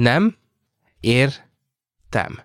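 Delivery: broken down syllable by syllable. Showing a learner how to say the phrase: broken down by syllable. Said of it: "Let's break it down by syllable".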